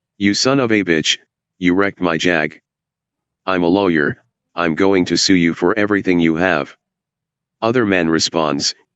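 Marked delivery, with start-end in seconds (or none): none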